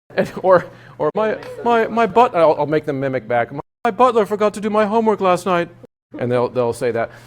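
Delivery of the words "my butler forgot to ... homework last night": lofty, posh private-school voice, pitched up. Voice teacher shows the phrase students mimic back, in private school voice. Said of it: "I call that private school voice".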